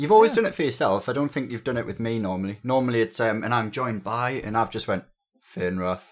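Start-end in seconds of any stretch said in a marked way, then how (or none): 4.9-6.0 dead, lifeless, boring flat monotone. Recalling how the name was normally announced, imitating a dead, dull intro. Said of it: "Like dead, dull and boring".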